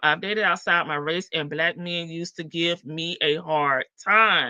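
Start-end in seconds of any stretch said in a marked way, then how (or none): none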